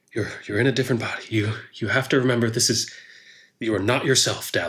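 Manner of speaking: voiced stage whisper, muttered under the breath. Retelling what another person did, the speaker gives his words half-whispering under breath. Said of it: "he whispers under his breath to himself".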